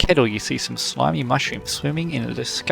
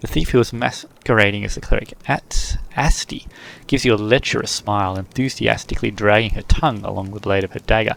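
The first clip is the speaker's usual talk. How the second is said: ordinary talk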